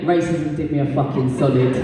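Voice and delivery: ordinary talk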